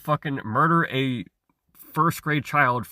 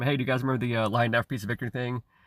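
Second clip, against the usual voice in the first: ordinary talk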